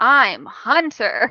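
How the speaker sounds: mock slow, clunky speech. Imitating a show's characters introducing themselves: imitating slow, clunky dialogue. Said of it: "they're speaking slowly".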